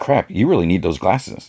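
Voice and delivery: ordinary delivery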